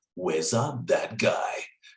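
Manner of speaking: big, grand, epic announcer delivery. Showing how the MC's name must be said every time; epic voice. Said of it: "It must be epic".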